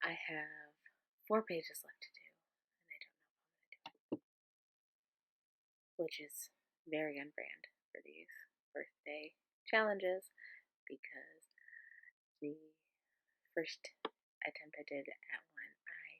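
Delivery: quiet whisper. Talking to camera late at night while people are asleep: whispering. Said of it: "kind of whispering 'cause people are asleep".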